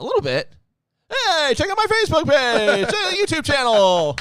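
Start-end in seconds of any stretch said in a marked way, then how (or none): 1.1-4.2 high, loud, bouncy stand-up comic delivery. Plugging the show's social pages while mimicking Tony Khan: Tony Khan impression. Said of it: "I'm worse than Tony Khan is".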